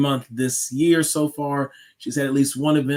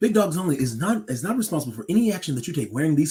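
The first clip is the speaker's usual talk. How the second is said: put-on radio announcer voice, ad-read style; 3 dB quieter than usual. Telling the people a disclaimer and a shout-out: radio voice. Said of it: "I'm gonna hit them with the radio voice".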